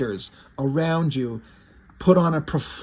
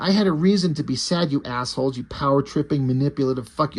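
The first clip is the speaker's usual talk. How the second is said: plain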